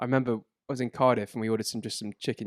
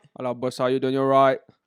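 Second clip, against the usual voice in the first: put-on Turkish accent; 7 dB louder than usual. In a role-play of ordering at a kebab shop, Turkish kebab man accent. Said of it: "to do the Turkish kebab man accent".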